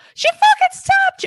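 very high, loud, shrill, shocked outcry. Host reacts to a guest revealing they were stabbed, high-pitched. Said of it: "I got so high pitched".

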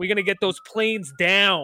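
put-on heavily laid-on thick Chicago accent. Describing an actor's performance in a Die Hard movie, as Dennis Franz, thick Chicago accent. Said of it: "thick ass Chicago accent".

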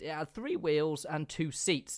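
voice breaking partway through the sentence. Reading out facts about an early car, voice cracking. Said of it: "There was a voice crack there".

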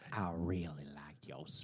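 eerie, creepy, unsettling voice. Acting out a stranger praising a speech, after being asked: creepy voice. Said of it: "I hope they say it so creepy".

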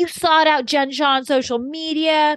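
acted high yell. Recounting an argument, acting out one person yelling an accusation at another. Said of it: "Lisa's yelling at her".

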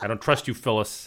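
ordinary delivery

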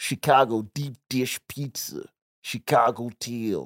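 fake, put-on Chicago mobster accent. Asked to do it again, imitating how Chicago people used to talk, Chicago mob-guy accent. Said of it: "Do it again?".

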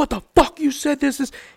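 put-on furious voice. Retelling what a furious cop said to the group: imitating someone furious. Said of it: "he was so pissed off".

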